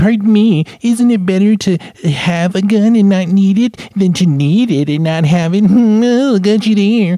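loud high-pitched nerd voice. Mocking a gun owner's argument back at them: stereotypical hacky nerd voice. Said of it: "I need to use this stereotypical hacky nerd voice".

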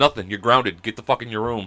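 normal talking voice

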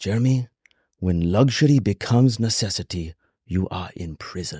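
put-on slow Chinese accent with broken English. Retelling a wealthy host's words, imitating broken english, chinese parable accent. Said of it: "in his perfect, like, broken English, Chinese parable accent".

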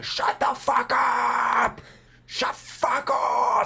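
very high, very slow, drawn-out screech. Retelling a homeless man screaming abuse at a woman: imitating a homeless man screaming. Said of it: "fucking scream at her".

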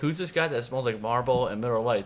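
ordinary talk, nothing marked

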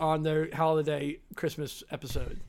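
ordinary talk, nothing marked

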